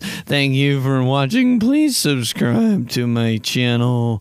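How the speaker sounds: online tutorial host voice. Mocking how everyone making YouTube tutorials sounds, YouTube tutorial guy voice. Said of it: "all sound like this".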